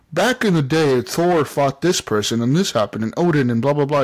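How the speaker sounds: usual speaking voice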